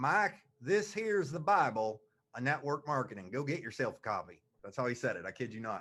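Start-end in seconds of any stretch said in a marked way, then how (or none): 0.0-4.4 put-on Kentucky-accented voice. Retelling what a man told him about a book: imitating a Kentucky accent. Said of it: "really good Kentucky accent, so I'm going to use it".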